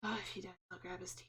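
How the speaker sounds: very quiet, barely audible under-the-breath mutter. Player putting twenty gold down and blinking at him: muttered under breath. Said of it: "under my breath".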